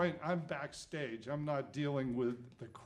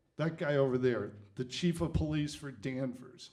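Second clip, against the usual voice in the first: usual speaking voice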